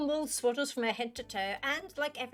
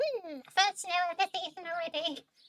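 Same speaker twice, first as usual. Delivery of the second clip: high, put-on cat character voice; 7 semitones higher than usual. Reading a game's cat lines aloud in a put-on cat voice. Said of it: "I'm not gonna continue doing that voice".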